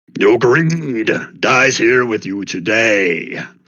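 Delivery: slow, throaty, rumbling guttural voice. A game master voices a creature rising from a cavern mound: guttural voice. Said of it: "Kind of rise up in a guttural voice".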